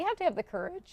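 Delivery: cracking voice. Speaking on air about Whole Foods shoppers, voice cracking. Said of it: "did my voice crack?".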